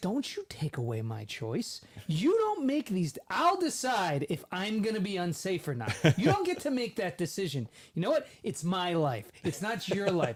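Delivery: mock heated, worked-up angry rant, swooping pitch. Speaker reenacts getting angry and yelling at the car's GPS, retelling angry yelling. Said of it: "I got angry".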